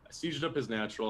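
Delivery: normal talking voice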